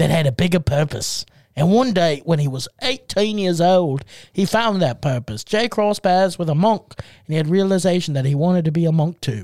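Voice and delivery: low, Australian-sounding accent. Narrating a story aloud, in an Australian-sounding accent. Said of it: "You sounded more Australian".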